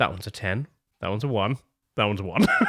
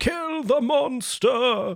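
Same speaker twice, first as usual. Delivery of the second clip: very high shrieking of a screaming crowd; 13 semitones higher than usual. Voicing a torch-carrying mob running up to the castle gates: screaming mob. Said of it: "the drawbridge and screaming".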